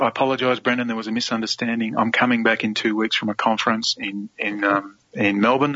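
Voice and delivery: plain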